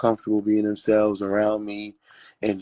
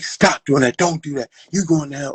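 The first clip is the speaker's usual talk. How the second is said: harsh, high, aggressive voice; 5 semitones higher, 4 dB louder than usual. Retelling how church people spoke: imitating an aggressive scolding. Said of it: "a very aggressive way of, like".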